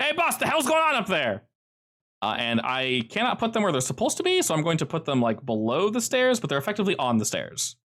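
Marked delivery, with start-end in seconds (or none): 0.0-1.4 very high, loud calling shout. Voicing someone climbing the stairs, calling up to the boss: shouting from the stairs. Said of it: "you hear them shout and go".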